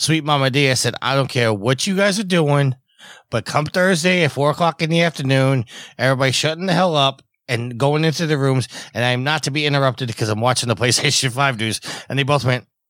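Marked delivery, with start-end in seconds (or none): none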